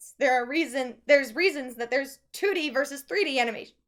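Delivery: speech jolted by hiccups. Arguing that animation has reasons to exist, the speaker talks with hiccups. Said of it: "I have hiccups".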